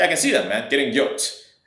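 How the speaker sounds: put-on dry, deadpan, sarcastic delivery with humor. Retelling a joke to a prospect back from the gym: imitating own deadpan sarcastic joke. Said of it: "I say that with a very straight face".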